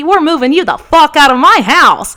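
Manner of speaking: mock fired-up delivery, loud, high, full energy. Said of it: "full of energy".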